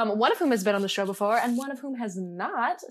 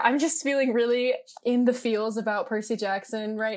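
ordinary talk

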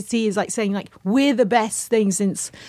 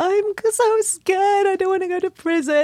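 very high, sobbing, scared, tearful crying voice; 9 semitones higher than usual. Retelling a video in which someone cried about going to prison: imitating someone crying.

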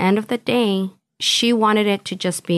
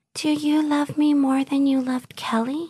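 airheaded, sugary, cutesy put-on high voice; 6 semitones higher than usual. Retelling a recorded phone call from custody, in a ditzy, cutesy put-on voice. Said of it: "That was my best impression of her ... that very ditzy, really cutesy voice".

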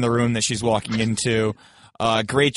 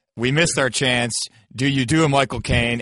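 normal talking voice

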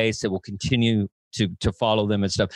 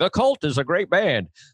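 high, giggly delivery, giggles mixed in; 6 semitones higher than usual. Showing how to do an impression of his own voice, giggling. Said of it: "you gotta throw a giggle in there".

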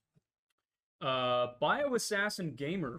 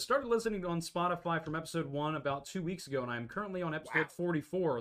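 ordinary delivery

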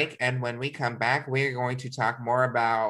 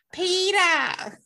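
very high, swooning, stretched-out, drawn-out calling voice; 3 dB louder than usual. Imitating a movie heroine calling out a name: Katniss Everdeen calling Peeta. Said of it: "that was Katniss Everdeen's love entrance".

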